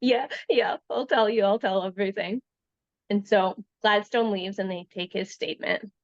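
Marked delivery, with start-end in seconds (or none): 0.0-2.4 talking while breaking down in sobs. Retelling a suspect agreeing to confess: imitating someone sobbing. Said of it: "And he sobbed, and he goes".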